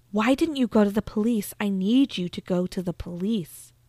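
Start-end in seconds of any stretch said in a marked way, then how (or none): none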